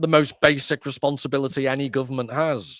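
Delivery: normal talking voice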